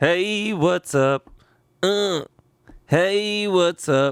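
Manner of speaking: identical repeated sound bite. Pretending to be a soundboard, pressing the same button twice. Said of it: "It is a soundboard".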